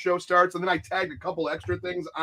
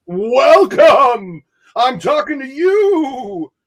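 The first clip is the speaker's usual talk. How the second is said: very loud, very slow, booming, drawn-out spooky ghost voice; 8 semitones higher, 11 dB louder than usual. Welcoming everyone to the show on Halloween: ghostly voice. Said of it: "I sounded like I was a ghost".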